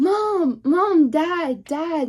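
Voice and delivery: mock very slow, high, stretched-out screaming. Retelling a seizure, calling for mom and dad: retelling own screaming. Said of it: "I was screaming".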